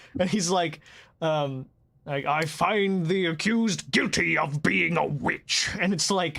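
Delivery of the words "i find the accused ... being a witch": smooth, buttery, pronouncing voice. Imitating a fantasy-world judge in a game cutscene: much deeper buttery voice. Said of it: "he also speaks with a much deeper, more, like, like, buttery voice".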